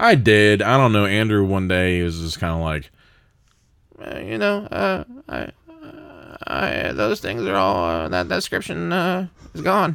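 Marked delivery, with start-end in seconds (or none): 4.0-10.0 very high, fumbling, pained, halting stammer. Retelling what Andrew said to the speaker: Andrew impression, sounding in pain. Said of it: "That is my first ever Andrew impression".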